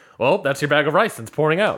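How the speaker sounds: ordinary delivery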